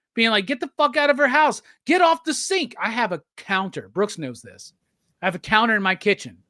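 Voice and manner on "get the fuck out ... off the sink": very high, exasperated, frustrated yelling. Describing how viewers react while watching the show, acting out screaming at the TV. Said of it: "you're screaming at the TV".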